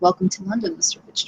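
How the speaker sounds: very low, voiced tone pitched very low. Narrating a woman greeting Mortimer before she vanishes, in a low tone. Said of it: "she will kind of say in a low tone".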